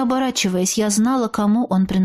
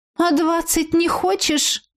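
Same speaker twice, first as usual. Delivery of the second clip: high, snorting, derisive, mocking scoff; 6 semitones higher than usual. Reading a first-person story, the narrator answers the red-haired trickster with a mocking snort. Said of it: "насмешливо фыркнула я в ответ".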